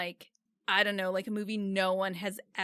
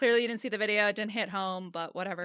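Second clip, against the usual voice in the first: normal talking voice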